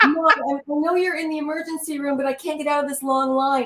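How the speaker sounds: showy, played-up, fake mock delivery. Retelling a fake phone call made in a checkout line: retelling a loud fake phone call. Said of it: "I made a fake phone call to the hospital".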